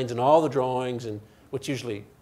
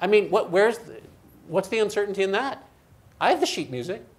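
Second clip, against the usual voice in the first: sarcastic, feigned puzzlement and disbelief, pitched up; 8 semitones higher than usual. Questioning why keeping an orchestra in time is hard: sarcastic. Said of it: "I'm being, you know, sarcastic".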